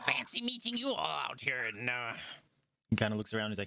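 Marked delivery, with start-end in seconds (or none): 0.1-1.6 goblin character voice. Voicing Gaxi the goblin greeting the approaching party: Gaxi the goblin voice. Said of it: "He says".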